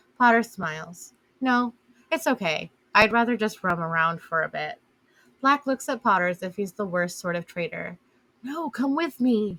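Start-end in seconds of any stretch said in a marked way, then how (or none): 8.4-9.6 dismayed whisper, higher and slower. Narrator reading a character's plea to a companion, in a dismayed whisper. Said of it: "he whispers in dismay".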